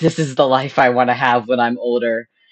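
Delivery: ordinary delivery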